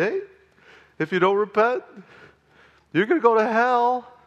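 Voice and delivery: mock kindly, gentle, very high-pitched tone. Retelling a pastor's warning about repentance: imitating Pastor Chuck saying it smiling. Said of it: "he'd say it with a smile".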